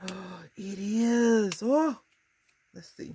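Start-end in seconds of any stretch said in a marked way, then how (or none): 0.6-2.0 high, loud gasping excitement. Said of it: "Am I too excited now?".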